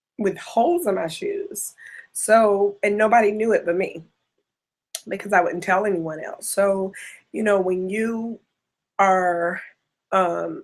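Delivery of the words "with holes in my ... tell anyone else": teary, choked-up voice welling with tears. Recalling walking the streets with holes in their shoes, tearing up. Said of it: "which I'm tearing up right now".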